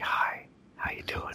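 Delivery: sultry, laid-back voice. Opening the podcast episode, the host greets listeners, sultry and relaxed. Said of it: "I'm being very sultry and relaxed in the microphone".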